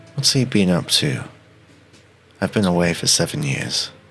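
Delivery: muttered under breath. Speaking in character to Teddy as someone leaves: quietly under the breath. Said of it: "say quietly under my breath to Teddy".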